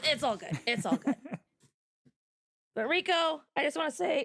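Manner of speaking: high-pitched, cracking up, laughing through the words. Addressing Rico after trying his deep bass, cracking up while talking. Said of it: "sorry, I'm cracking up here".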